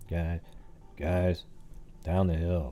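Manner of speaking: very quiet, very slow, low, drawn-out murmur. Showing how you call out while trying to be quiet, talking low and quiet. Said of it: "If you're just kind of talking low, you go".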